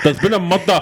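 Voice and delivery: put-on regional North East accent. Asking a friend for a North East accent, then trying it, put-on North East accent. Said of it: "Can you do a North East accent?".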